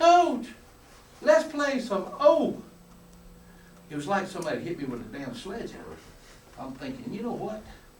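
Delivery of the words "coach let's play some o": very high, squeaky voice, very slow and drawn-out. A coach retells the moment Stoney spoke up, imitating Stoney's high squeaky voice. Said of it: "In his high, squeaky voice".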